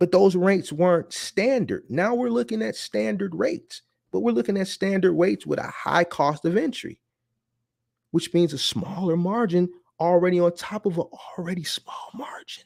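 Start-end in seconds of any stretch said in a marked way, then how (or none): 8.1-12.6 stage whisper, theatrical and deliberately audible. Speaker talks to listeners about margins, whispering. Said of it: "I'm whispering to let you know".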